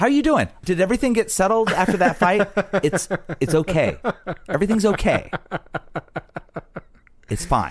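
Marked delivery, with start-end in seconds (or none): 2.8-7.7 resentful, grudging, unhappy, dismissive tone. Showing the tone an unhappy partner in a relationship uses: tone of an unhappy partner. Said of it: "the same tone that an unhappy partner in a relationship says".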